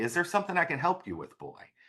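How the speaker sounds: sing-song Irish brogue. Retelling how a monk offered him help over his shoulder, in Brother Ambrose's Irish brogue. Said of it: "I hear an Irish brogue say".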